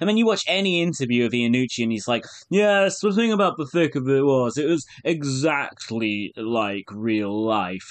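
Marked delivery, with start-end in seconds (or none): 2.5-7.9 smug, self-satisfied, pleased-with-self voice. Quoting what Iannucci says in interviews: smug Iannucci voice. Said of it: "a general kind of smug voice will just have to suffice for Iannucci quotes".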